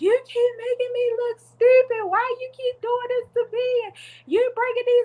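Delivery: high, loud bawling wail. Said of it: "in the middle of the street bawling like".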